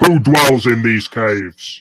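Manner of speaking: very loud, high-pitched shout at full lungs. Player character readies sword and shield before calling out: very loud shout. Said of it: "in like a a very loud voice".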